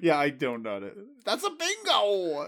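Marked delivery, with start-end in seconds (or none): 1.2-2.5 put-on high voice with the word bingo stretched out. Wishing for a soundboard catchphrase, Christoph Waltz voice. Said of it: "In the Christoph Waltz voice? S1: Yeah".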